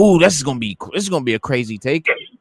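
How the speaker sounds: play-acted, thrilled, amped-up excitement. Retelling seeing the trailers for a film: imitating own past excitement. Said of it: "You know how excited I was".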